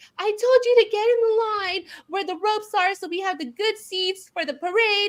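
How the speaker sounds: play-acted, very high, screaming, going-off rant. Retelling how a mom at Disneyland screamed at her husband: imitating a woman screaming. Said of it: "screaming at her husband".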